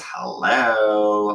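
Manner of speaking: put-on, drawn-out, growling demon voice. Retelling being caught drunk by Em, the speaker answers in a demon voice. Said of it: "it's like my demon voice".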